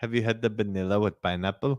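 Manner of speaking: put-on non-native English accent. Retelling what the worker at the order window asked: imitating a non-native english accent. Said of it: "she had an accent. I will do it".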